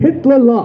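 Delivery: ordinary delivery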